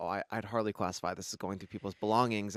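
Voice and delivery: plain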